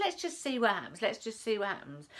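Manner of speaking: ordinary talk, nothing marked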